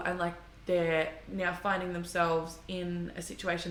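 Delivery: ordinary talk, nothing marked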